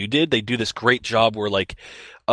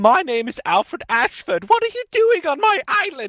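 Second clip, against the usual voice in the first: very high-pitched, cartoonish voice; 3 dB louder than usual. Talking about a video game, the speaker imitates how Alfred Ashford sounds. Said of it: "that's exactly what he sounds like".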